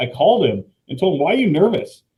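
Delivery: incredulous, exasperated scolding.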